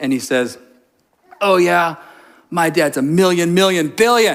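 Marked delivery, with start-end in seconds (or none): 1.4-4.3 imitated cute little child lisp, higher pitch. Retelling what a boy at story time told the speaker, imitating a kid's lisp. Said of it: "cute little lisp".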